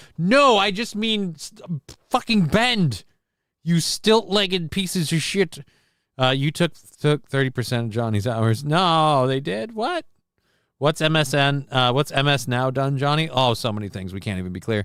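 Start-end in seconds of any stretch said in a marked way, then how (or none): 0.2-5.6 put-on high screaming, swearing outburst. Retelling screaming at own legs when they will not work: retelling own screaming. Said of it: "I'm screaming at my legs".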